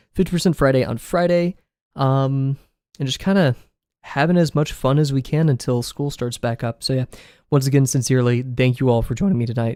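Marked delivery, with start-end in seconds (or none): 8.5-9.8 voice cracking. Thanking viewers at the end of a stream, voice cracking. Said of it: "voice crack".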